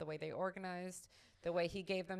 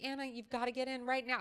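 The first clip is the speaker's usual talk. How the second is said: high, frantic, panicked screaming; 6 semitones higher, 5 dB louder than usual. Retelling two moms running out to the speaker's car, imitating their screaming. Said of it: "they're like screaming like that".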